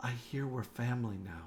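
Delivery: hushed, soft half-whisper, close up. Game narrator voicing a woman who hugs a player character, half-whispering in his ear. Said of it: "she whispers in your ear".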